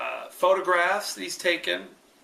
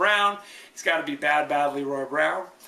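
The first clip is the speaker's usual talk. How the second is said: normal talking voice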